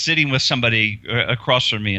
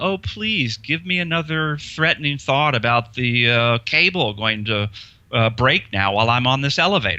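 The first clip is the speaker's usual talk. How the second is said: taunting, provocative, goading sarcastic tone. Showing how to talk back to an anxious thought: sarcastic. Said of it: "almost sarcastically".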